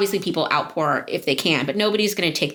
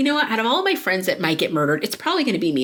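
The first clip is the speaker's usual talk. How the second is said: ordinary delivery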